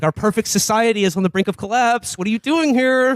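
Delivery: acted-out furious ranting outburst, high and angry. Retelling the leader punching a table: imitating an angry rant. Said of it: "He's pounding the table".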